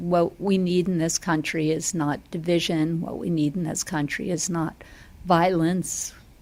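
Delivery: ordinary talk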